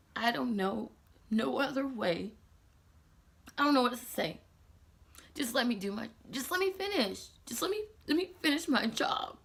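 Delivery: crying while talking, speaking through tears. Speaker recounting someone getting annoyed during a makeup job, crying while talking. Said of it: "I'm so stupid for crying".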